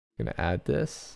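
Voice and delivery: plain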